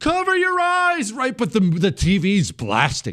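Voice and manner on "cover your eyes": put-on scream, much higher. Retelling warning teenage boys from the kitchen, retelling a scream across the room. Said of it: "I'm screaming across the room".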